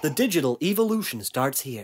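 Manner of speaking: very deep, soft, put-on American accent. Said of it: "quite a good American accent there".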